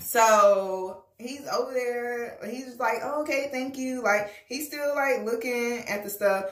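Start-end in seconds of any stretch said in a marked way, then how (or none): 3.0-4.0 soft, feminine-sounding tone from a man. Retelling a male shopper at the store, imitating a man's feminine voice. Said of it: "he talked like a female".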